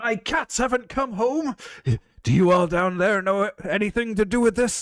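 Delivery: loud, carrying, booming high-pitched bellow. As game master, the speaker voices someone calling down from a clifftop: booming voice. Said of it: "you hear a voice booming".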